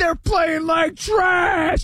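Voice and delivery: high-pitched, slow, furious shouting.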